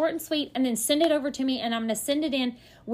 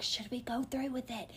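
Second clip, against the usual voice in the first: secretive, hushed half-whisper, very soft and quiet; 13 dB quieter than usual. Retelling a partner's question on the phone: imitating someone half-whispering. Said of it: "whispering on the phone".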